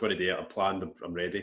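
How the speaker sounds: ordinary talk, nothing marked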